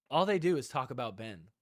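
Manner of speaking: plain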